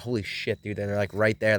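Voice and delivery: ordinary talk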